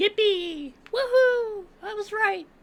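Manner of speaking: very high, silly, cheerful put-on voice. Speaker after checking an answer, in a put-on voice. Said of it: "I'll never do that voice again".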